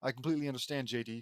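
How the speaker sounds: plain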